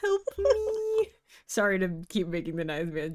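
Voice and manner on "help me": hammy, badly acted fake pleading, sometimes higher. Begging for a door to open in a game: hammy fake pleading. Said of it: "the worst voice acting in the world".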